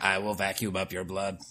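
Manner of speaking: very low mechanical robot voice. Joking about a sensor-driven vacuum speaking, robot voice. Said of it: "in a robot voice".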